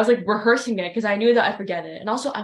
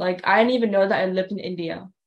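ordinary delivery

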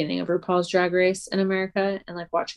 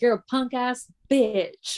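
put-on Scottish accent, pitched higher; 6 semitones higher than usual. Quoting a father character insulting his son: Logan Roy with Scottish accent. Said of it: "Logan Roy from Scotland was like".

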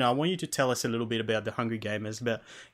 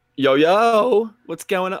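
cracking voice, higher and louder; 9 semitones higher, 11 dB louder than usual. Greeting the others at the start of the recording, voice crackling. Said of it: "voice crackle".

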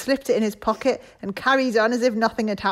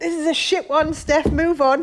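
high-pitched talking dog voice; 5 semitones higher than usual. Putting words in a dog's mouth after it interrupts: voicing a dog. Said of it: "that's Claire's dog just going".

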